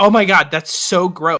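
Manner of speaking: put-on loud voice. Retelling what a woman beside them at the movie said: imitating someone talking loudly. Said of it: "really loudly".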